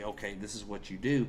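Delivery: ordinary delivery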